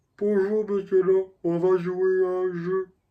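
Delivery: high, goofy, dopey, harmless-sounding put-on voice. Complaining about a guy who doesn't sound like John Kramer, the speaker imitates him: mocking an unmenacing voice. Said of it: "Il parle comme ça".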